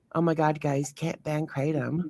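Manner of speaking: gentle, very quiet, soft voice. Demonstrating a way you can't get the point across: soft voice. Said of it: "you can't do it with a soft voice like".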